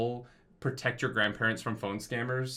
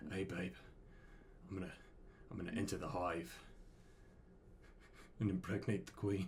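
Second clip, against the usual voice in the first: put-on seductive whisper, lower and quieter; 5 semitones lower, 14 dB quieter than usual. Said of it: "Whispering sweet nothing in your ear".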